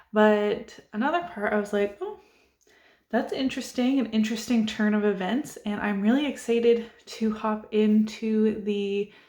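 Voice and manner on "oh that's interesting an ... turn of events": ordinary talk, nothing marked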